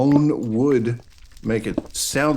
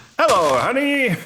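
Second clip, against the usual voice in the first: fake mid-Atlantic accent, higher and louder; 14 semitones higher, 4 dB louder than usual. Joking about someone using a trained announcer voice at home: put-on mid-atlantic accent. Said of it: "how might they sound if they just carried that voice through to their everyday lives".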